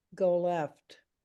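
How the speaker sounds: put-on flat calm voice. Recounting a voice heard while blinded by oncoming car lights, imitating a deadpan calm voice. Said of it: "this voice says like this".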